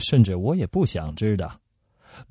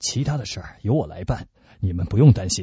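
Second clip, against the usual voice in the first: ordinary delivery, nothing marked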